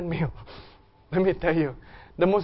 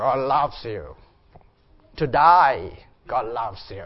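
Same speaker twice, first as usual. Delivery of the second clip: low Australian accent, "die" drawn out; 6 semitones lower than usual. Speaker voicing God's message after a demon's, in an Australian angel accent. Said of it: "let's give an Australian angel too".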